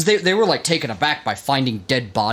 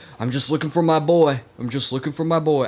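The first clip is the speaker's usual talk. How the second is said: put-on southern drawl on every word. Retelling what a man kept saying during a search: southern accent. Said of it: "I gave him a sou-, uh, southern accent".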